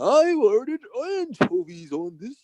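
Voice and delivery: evil character voice. Explaining a show's joke, speaker does Bane's line in hoity-toity British Bane voice. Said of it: "this British sounding voice and all hoity-toity".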